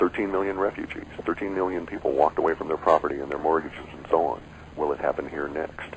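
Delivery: normal talking voice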